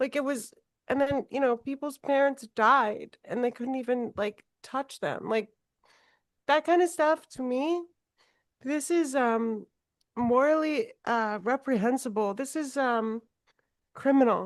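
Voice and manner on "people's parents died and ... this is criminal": tearful, crying, voice breaking. Describing not being allowed to see their mother after surgery, crying while speaking. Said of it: "I didn't mean to cry".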